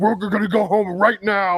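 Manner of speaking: play-acted, high-pitched scolding yell. Retelling parents in the park yelling at their children: imitating a parent yelling at kids. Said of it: "yelling at the children".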